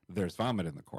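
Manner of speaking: ordinary delivery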